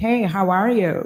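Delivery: slow, adopted, put-on American accent. Answering phone calls, the speaker retells greeting callers in a put-on American accent. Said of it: "I used to actually adapt to an American accent".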